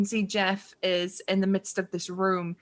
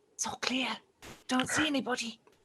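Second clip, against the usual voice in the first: soft, pitched-up whisper; 5 semitones higher, 7 dB quieter than usual. Voicing a character peeking into a hallway, whispering back: whispering. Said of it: "he whispers back to you".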